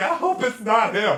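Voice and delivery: mock teary sobbing, high, drawn-out whimpering. Retelling reality show women reacting to the red lights: imitating women crying. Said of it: "Them hoes immediately start crying".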